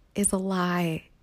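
secretive, hushed half-whisper. Mid-discussion, the speaker makes a pointed aside: half-whispering. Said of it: "I'm whispering now".

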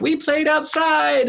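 put-on very high, sweet little kid voice. Parent quoting their daughter answering the teacher, in a sweet little kindergarten voice. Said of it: "the sweet little kindergarten voice".

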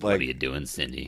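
mock horror-film style delivery. Quoting a scene from Scary Movie to another speaker: Scary Movie impression. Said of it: "It was a really good impression".

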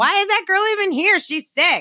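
high, loud mocking voice, sounding disgusted.

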